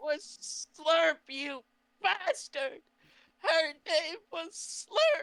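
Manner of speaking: high, drawn-out sobbing cry. A character berates another character, sobbing. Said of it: "I just keep sobbing".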